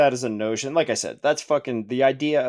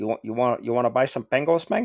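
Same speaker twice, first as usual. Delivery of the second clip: put-on Cuban accent. A speaker pictures a trench-coated researcher selling at a market, cuban accent. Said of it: "I don't know why I'm doing a Cuban accent".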